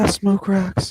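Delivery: high, worn-down, down-and-out character voice. Telling a friend how he sounds: Dave Chappelle's Tyrone Biggums voice. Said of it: "You sound like when Dave Chappelle used to be like".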